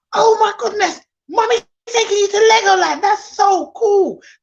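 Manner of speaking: big animated hype, very high, over-excited. Showing how to excite children about a visit: over-excited, animated. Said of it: "I'm very animated".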